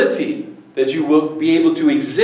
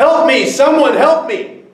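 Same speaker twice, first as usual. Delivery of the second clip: high, loud, desperate yell. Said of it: "and he yells".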